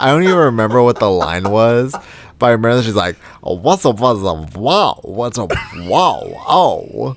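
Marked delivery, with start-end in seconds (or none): 3.4-7.2 exclamatory oh-and-wow, ow-style kind of voice. Imitating a queen's remembered line: an "Ow" kind of voice. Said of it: ""Ow" kind of voice".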